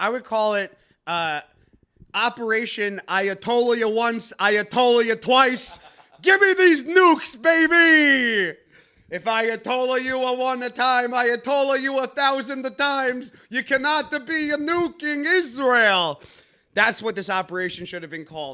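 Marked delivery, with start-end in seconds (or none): 2.1-16.2 loud, slow, exaggerated put-on Italian accent. Proposing a name for the mission, in an offensive Italian accent. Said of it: "Offensive Italian accent".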